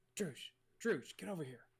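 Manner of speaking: theatrical whisper. Acting out calling someone over from over the shoulder, retold stage whisper. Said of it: "but like stage whisper over my shoulder".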